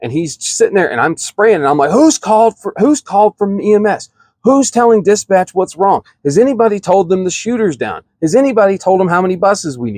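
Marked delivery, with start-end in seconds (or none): 1.9-10.0 acted drill instructor barking, high and yelled. Retelling questions yelled at trainees during a shooting drill: retelling own yelling. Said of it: "you're yelling this at them".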